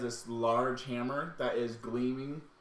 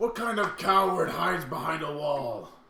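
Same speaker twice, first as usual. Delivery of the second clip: big, loud, booming voice; 4 semitones higher, 6 dB louder than usual. Voicing a hidden figure who calls out to the party: loud booming voice. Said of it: "You just hear this loud voice".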